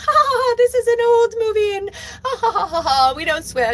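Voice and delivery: put-on very high voice, giggling while talking. Retelling how Glinda laughs off the Wicked Witch: imitating Glinda laughing while talking. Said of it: "she starts laughing and she's like".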